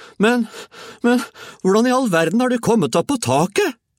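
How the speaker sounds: shrill, very high shout of disbelief. George's mother calls up to Grandma on the roof, shouted. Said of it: "ropte moren".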